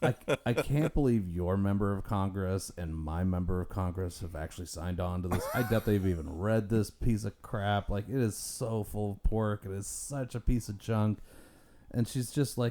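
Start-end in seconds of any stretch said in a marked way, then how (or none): none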